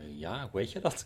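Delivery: astonished, very surprised, taken-aback delivery. Retelling a man's reaction to being asked if he's Dutch, imitating a very surprised man. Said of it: "En die man heel verbaasd".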